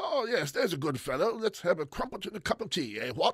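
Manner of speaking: mock stuffy British gent voice. Speaker mimics how characters in a Japanese-set show talk: pompous British accent. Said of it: "they sound like this. ... They're just pompous British men".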